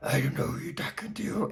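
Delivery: whispered, breathy, hushed horrible demon voice. Recapping a scene where Pat answers back, imitating Pat's demon voice. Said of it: "she said something like that in her demon voice".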